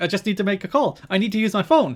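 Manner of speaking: mock, high, frantic, demanding meltdown shouting. Retelling a woman's meltdown in a store from a wrestling show: imitating someone shouting. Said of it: "She starts shouting at him".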